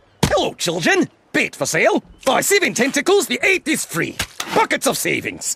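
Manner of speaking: put-on South African accent. Opening a podcast sketch as the character: Glomgold voice, South African accent. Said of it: "What's with the South African accent?".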